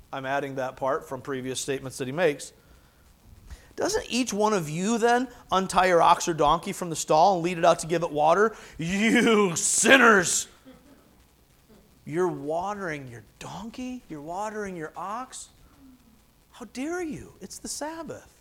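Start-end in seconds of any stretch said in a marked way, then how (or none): 8.7-18.2 slow, dripping sarcasm with feigned reproach. Retelling Jesus rebuking the crowd: Jesus speaking sarcastically. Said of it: "Jesus does like to use sarcasm here".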